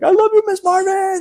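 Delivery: put-on very high, shrill, loud child scream. Retelling how a little student reacted to getting candy: imitating a kid screaming. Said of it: "at the top of his lungs screams".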